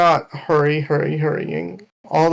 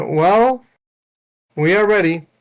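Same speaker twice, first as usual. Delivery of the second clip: firm announcing tone with a slight lift of voice. Calling out to the group after waiting, raised voice. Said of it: "I'm going to raise my voice and say".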